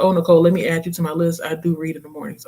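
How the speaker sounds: ordinary talk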